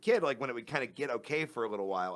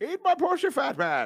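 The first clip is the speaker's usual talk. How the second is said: shrill, high, loud villain voice; 7 dB louder than usual. Retelling how she answered him during sex, Bane voice. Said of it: "And she responded in Bane's voice".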